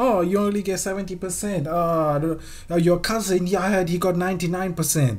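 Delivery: high, belittling, put-on strict parent voice. Mocking how their parents talk to them, the speaker does a put-on parent accent. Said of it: "What even was that accent".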